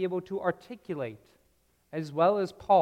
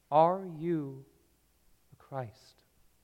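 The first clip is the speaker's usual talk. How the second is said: acted small trembling voice, slower; 3 semitones lower, 3 dB quieter than usual. Speaker acting out a once-powerful man's question, imitating a small, trembling voice. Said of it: "in a small, trembling voice".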